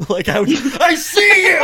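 slow, high-pitched, drawn-out shout. Speaker retells yelling during sleep paralysis, retelling a yell. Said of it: "Like I was yelling it".

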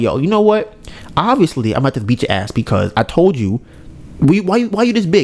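usual speaking voice

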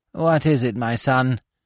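cold, weary, tired-sounding voice. A bishop addresses the priest who stands before him, in a cold, weary voice. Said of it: "in his cold, weary voice".

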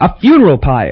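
crying out, delighted and self-satisfied. A man working out what to do with the bodies hits on an idea; cried out, pleased with himself. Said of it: "he cried, really pleased with himself".

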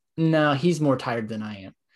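plain

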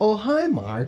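high-pitched, offhand, tossed-off delivery. Retelling greeting a son entering the room: Tommy Wiseau impression. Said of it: "I'd go".

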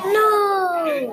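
loud, high, drawn-out exclamation. Explaining exclamation marks, the speaker demonstrates one, saying it very loud. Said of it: "But you have to say it very loud".

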